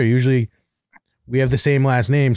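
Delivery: plain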